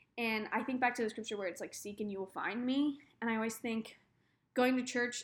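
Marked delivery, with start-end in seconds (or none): none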